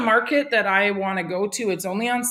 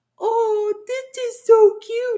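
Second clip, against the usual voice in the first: tiny, very high, very drawn-out, slow falsetto; 14 semitones higher, 4 dB louder than usual. Retelling what she said while playing with her doll, in a little falsetto voice. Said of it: "In a little falsetto voice".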